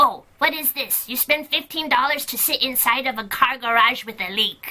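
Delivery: put-on Chinese-accented voice. Retelling how the mother would react to the visit: imitating mother's chinese accent. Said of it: "she has a Chinese accent. She actually talks like this".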